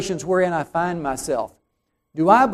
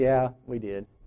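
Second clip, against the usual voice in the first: put-on sheepish tone, much quieter, lower; 6 semitones lower, 7 dB quieter than usual. Imagining a couple announcing their new baby, mock-sheepish. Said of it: "say rather sheepishly".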